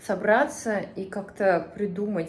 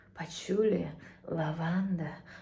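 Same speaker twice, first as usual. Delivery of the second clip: blissful, commercial-style narrator voiceover; 3 semitones lower, 5 dB quieter than usual. Praising a scented candle's smell, imitating an advertisement voice. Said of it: "вот таким голосом".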